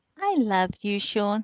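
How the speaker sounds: sounding nice and soft. Retelling what a friend would say: imitating Lainey saying something sweetly. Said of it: "what Lainey would say".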